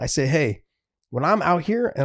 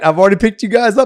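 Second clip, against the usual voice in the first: put-on yell, higher and louder; 6 semitones higher, 10 dB louder than usual. Retelling a father yelling through the door at the boys: imitating dad yelling. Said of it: "my dad yells through the door".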